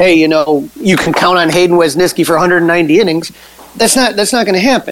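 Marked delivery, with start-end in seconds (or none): none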